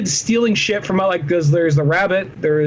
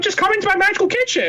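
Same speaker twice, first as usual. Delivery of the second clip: put-on kindly old man voice, much higher pitch; 13 semitones higher than usual. Describing a cereal commercial to friends, Cinnamon Toast Crunch old man voice. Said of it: "a kindly old man for Cinnamon Toast Crunch".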